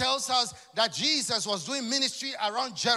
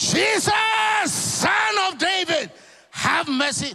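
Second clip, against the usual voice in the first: loud, high, slow, stretched pleading cry; 8 semitones higher, 7 dB louder than usual. Retelling a blind man begging jesus: acting out crying out louder. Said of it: "He cried out the more".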